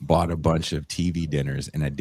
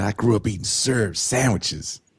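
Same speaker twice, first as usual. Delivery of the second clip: put-on Southern accent, much higher; 5 semitones higher than usual. Speaker quotes a man describing what he grew up eating: thick southern accent. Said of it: "he has a very thick Southern accent".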